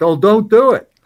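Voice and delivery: loud, high, full-force yell. Retelling how the president reacted to being woken: imitating someone yelling. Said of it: "he yelled".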